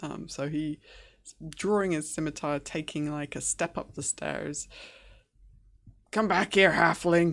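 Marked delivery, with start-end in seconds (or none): 6.1-7.3 furious, very loud, angry bellowing yell. Voicing a humiliated enemy chasing a halfling up the stairs: angry. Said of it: "He's angry".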